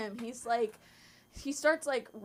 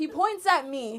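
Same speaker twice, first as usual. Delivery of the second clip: plain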